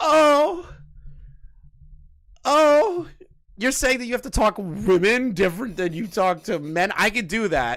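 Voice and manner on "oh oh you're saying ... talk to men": fake, high, preachy, moralizing indignation. Mocking how critics would moralize from a soapbox: mock preachy soapbox outrage. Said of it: "I can stand on the soapbox and be like".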